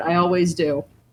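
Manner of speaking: ordinary delivery, nothing marked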